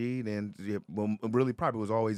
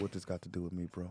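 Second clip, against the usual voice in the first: put-on lowered voice, deeper and quieter; 3 semitones lower, 8 dB quieter than usual. Retelling own reaction when pulled aside about money: retelling own deeper voice. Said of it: "my deep, my voice get changed".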